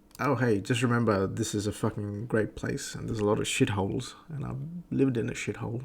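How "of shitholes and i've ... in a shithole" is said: normal talking voice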